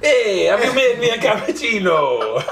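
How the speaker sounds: put-on Italian accent. Denying sounding like the Italian guy from this morning, then imitating the Italian guy's accent. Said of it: "I don't sound like that Italian guy".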